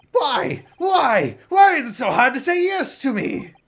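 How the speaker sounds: full-volume, very loud, shrill, high-pitched yelling. Pushing a reluctant listener to agree, yelling. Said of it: "you're yelling at me".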